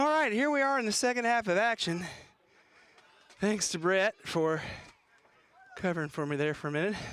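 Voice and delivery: winded, breathless, rushed, panting and huffing between words. Speaker comes back on in the second half after a break, out of breath. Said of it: "Excuse the huffing and puffing".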